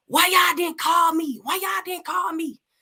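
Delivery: very high, loud, repeated screaming. Retelling finding blood in the house: retelling own screaming. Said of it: "I just screaming and screaming and screaming like".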